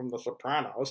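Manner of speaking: very quiet, low, mumbled, under the breath. Imagining what someone should have said to Christopher, acting out a mutter under breath. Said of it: "under his breath".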